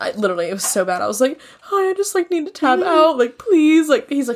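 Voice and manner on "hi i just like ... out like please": hysterically crying, high-pitched, tearful pleading voice. Retelling a phone call to a bar after getting upset: imitating own hysterical crying. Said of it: "hysterically crying".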